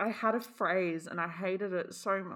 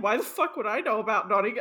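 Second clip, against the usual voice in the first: ordinary delivery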